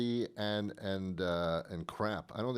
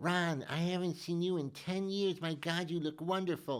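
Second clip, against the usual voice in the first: high, overly familiar woman's voice; 8 semitones higher than usual. Acting out how women greet him to seem familiar, imitating a woman's voice. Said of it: "that's my woman's voice".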